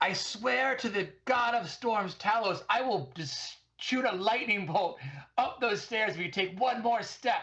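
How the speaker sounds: menacing, intimidating shout, pitched very high. In character, warning someone coming up the stairs, intimidating shout. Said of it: "in my most intimidating shout".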